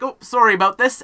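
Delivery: shrill, very high, very loud elf voice. Voicing a high elven gardener apologizing for a screaming mandrake: high elf character voice. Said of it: "It's like".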